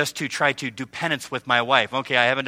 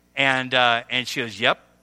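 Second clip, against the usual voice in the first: usual speaking voice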